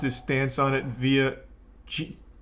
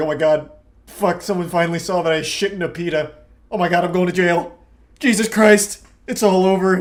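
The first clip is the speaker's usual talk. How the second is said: loud, frantic, full-blown panicked freak-out; 4 semitones higher, 8 dB louder than usual. Imagining the guy behind the account who got caught: acting out a panicking account owner. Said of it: "Imagine being the guy behind that account. They're like".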